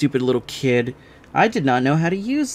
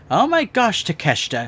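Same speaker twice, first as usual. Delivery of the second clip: put-on stuck-up, snobby popular-girl voice; 4 semitones higher than usual. Describing how a game character should have sounded: popular girl voice. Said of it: "She gave me popular girl vibes".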